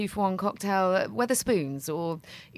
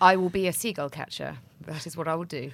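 mock deadpan delivery; 3 semitones lower than usual. Parent quoting their daughter after a seagull took her nuggets, imitating deadpan delivery. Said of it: "it was just said so deadpan".

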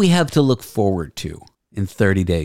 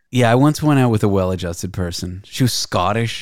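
usual speaking voice

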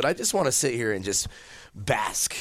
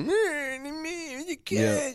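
high, whiny mock crying. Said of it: "Stop whining".

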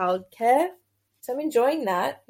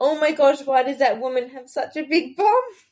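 put-on child's voice, blurted outburst, loud screamed yell; 4 semitones higher, 4 dB louder than usual. Recalling being a child by a conveyor belt, the speaker yells to their dad, retelling a childhood yell. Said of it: "I yelled out to my dad".

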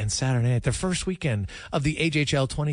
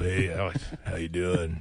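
very low, deep, slow, deliberate voice; 8 semitones lower, 4 dB quieter than usual. Imitating the guest's deep voice after praising it: imitating Jarius's deep voice. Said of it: "Oh, it's really deep".

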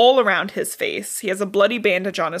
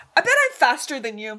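put-on high, childish, bragging like a little kid; 5 semitones higher than usual. Acting out a character as a six-year-old at recess: Katniss as a six-year-old. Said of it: "like a six-year-old in recess".

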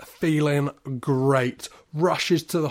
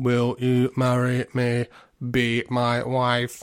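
flat, slow, level, droning clinical robot voice; 3 semitones lower than usual. Retelling how Dr. Lover proposes to her, as a weird clinical robot. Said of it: "He is like some weird clinical robot".

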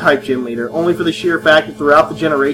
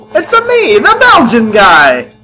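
high, loud, swooping sing-song voice; 7 semitones higher, 6 dB louder than usual. Reading out a listener letter that asks for it: Mario voice. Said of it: "Mario voice, please".

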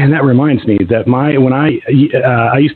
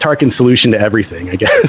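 usual speaking voice

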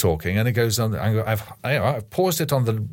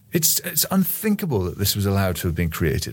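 ordinary delivery

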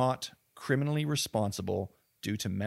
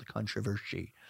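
put-on Scottish-accented voice, quieter; 7 dB quieter than usual. Repeating a word for fun in a put-on voice: Sean Connery voice. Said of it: "the Sean Connery in me just came out".

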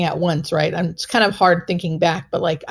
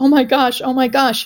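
thrilled, bubbling, excited, high-pitched exclamations; 5 semitones higher than usual. Recalling a voice that spoke to the speaker, imitating an excited voice. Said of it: "his voice was like excited".

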